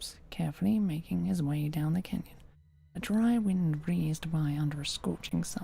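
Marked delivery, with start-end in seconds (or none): none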